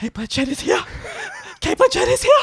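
hurried whisper pitched very high. Telling colleagues, with customers around, that Cate Blanchett is here: retelling a whisper. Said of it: "I just whisper because there's people around".

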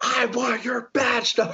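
mock, very high, flat scream. Retelling demanding a badge number from the lady: imitating screaming at someone. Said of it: "screaming at this lady".

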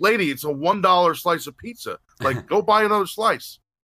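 play-acted high-pitched yell, voice pushed up. Retelling a wrestling match with an angry mother: retelling a yell.

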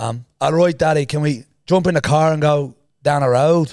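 accent from the south of Ireland. Speaker to an audience, showing how someone from ireland's south would talk: southern irish accent. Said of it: "if I was from the south of Ireland, I'd say".

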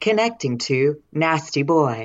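stern, serious robotic announcer-like machine voice. Retelling what a Bluetooth device said when it connected, imitating a serious robotic voice. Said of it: "this serious robotic voice in my ear going".

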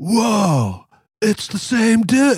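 slow surfer-dude drawl, whoa dragged out, totally chill. Describing how an actor sounds when he sees Dracula, in a Bill and Ted dude voice. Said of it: "he basically sounds like his Bill and Ted character when he's like".

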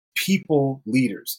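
slow, careful, deliberate, each word laid out. Having to say a phrase slowly rather than fast: slow, careful delivery. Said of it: "I had to say that slowly".

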